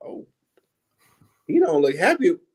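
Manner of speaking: speaking while fighting back a laugh. Retelling the waitress's remark: imitating a waitress holding back laughter. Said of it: "she's trying not to laugh".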